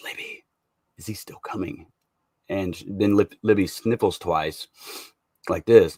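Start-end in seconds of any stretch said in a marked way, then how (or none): 0.0-1.9 very quiet, hushed whisper, barely audible. Retelling a line heard when listening closely: imitating a whisper. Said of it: "sounds like she whispers".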